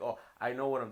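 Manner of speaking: arrogant, smug, calm, unruffled know-it-all tone. Complaining about a friend, imitating an arrogant calm tone. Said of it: "you come off this arrogance".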